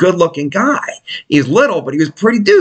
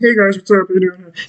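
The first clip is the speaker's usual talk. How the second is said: put-on frog voice, slower. Retelling how a guy with a Miata greeted everyone, Kermit the Frog voice. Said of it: "Sound like Kermit the Frog when he talked".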